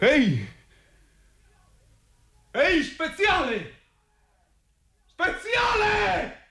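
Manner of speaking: long shout, pitched high. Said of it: "Chi mi chiama urlando così?".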